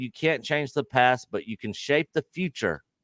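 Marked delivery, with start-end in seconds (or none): none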